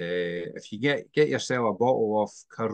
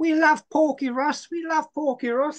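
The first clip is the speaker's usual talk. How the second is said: terrible put-on Scouse accent at a very high pitch; 3 dB louder than usual. Quoting what the kid's missus says about the speaker: bad Scouse accent. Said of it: "That's the worst Scouse accent I've ever heard".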